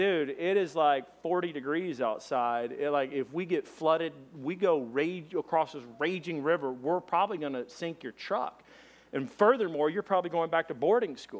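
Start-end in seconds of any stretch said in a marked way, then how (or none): none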